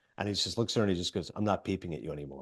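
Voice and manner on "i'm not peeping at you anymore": put-on, very low, flat, stone-faced deadpan delivery. Retelling a film scene where a character answers a woman: imitating a stone-faced delivery. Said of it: "but he's just stone-faced".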